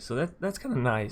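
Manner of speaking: cracking, just-woke-up voice, breaking partway through. Just woke up, talking about a favorite card deck, voice cracking. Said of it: "Voice crack".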